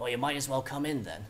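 put-on old, wizened voice. After a knock, a voice calls from within, old, wizened voice. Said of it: "an old, wizened voice call from within".

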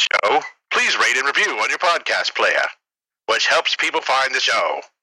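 put-on vintage broadcast announcer delivery, old radio style. Reading the podcast show outro in an old radio voice. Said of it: "I'll do it in old radio voice".

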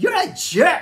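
booming, very high, shrill call. Retelling a girl calling out from behind the group: retelling a booming voice. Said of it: "this girl's voice booming in from behind us".

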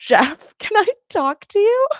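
acted-out, crying, tearful, very high pleading. Retelling a tearful reply when asked to vote: retelling own tearful reply. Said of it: "I was crying and I was like".

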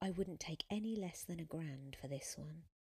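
ordinary delivery

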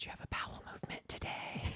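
whispered, very quiet and hushed. Retelling a nurse's question in the hospital: imitating a nurse whispering. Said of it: "kind of whisper to me".

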